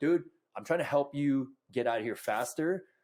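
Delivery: ordinary delivery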